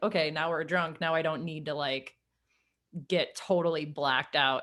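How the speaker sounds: ordinary delivery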